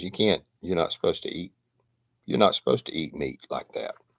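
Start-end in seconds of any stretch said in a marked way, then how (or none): none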